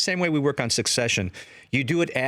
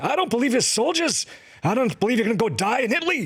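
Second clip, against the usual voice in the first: very high, furious, angry scolding tone; 12 semitones higher than usual. Recalling how they drove him crazy, the speaker imitates Gene Saks getting mad. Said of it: "he'd get real red in the face and say".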